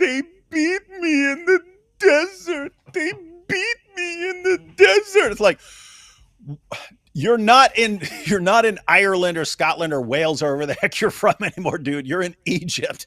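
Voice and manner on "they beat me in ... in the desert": acted-out, very high, weepy, drawn-out complaining whine. Retelling a man complaining about how he was treated, mock-whining. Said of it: "he's whining about how he was treated".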